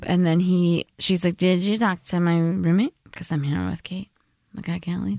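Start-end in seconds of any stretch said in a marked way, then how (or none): none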